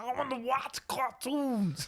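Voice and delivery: put-on high, drawn-out child voice. Imagining Bill Cosby's kid who sounds like him: Bill Cosby voice. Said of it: "that does not sound like Bill Cosby".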